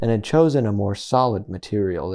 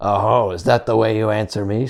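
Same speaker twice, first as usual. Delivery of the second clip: very rough, harsh voice; 4 dB louder than usual. The fox, refused entry, answers in a very rough voice. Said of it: "speaking very roughly in his natural voice".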